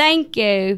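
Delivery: loud, fake Australian accent. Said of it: "you have to do an Australian accent".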